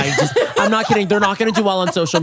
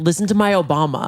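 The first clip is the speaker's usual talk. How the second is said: ordinary talk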